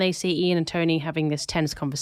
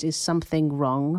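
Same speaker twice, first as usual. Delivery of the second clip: ordinary talk, nothing marked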